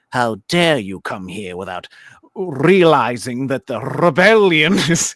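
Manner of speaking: booming, loud, drawn-out cartoon British accent, rolled R's. Plugging their Star Wars channel, the speaker demonstrates a cartoonish British accent. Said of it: "cartoonish British accents, where they're like".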